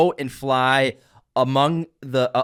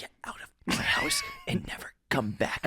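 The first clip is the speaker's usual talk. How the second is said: whispering; 11 dB quieter than usual. Quoting a movie character's line to another speaker: imitating Tom. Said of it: "That's exactly how he says it".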